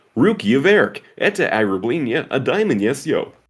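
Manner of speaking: put-on American accent. Showing a favorite russian phrase, said in an american accent. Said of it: "If I said it in an American accent".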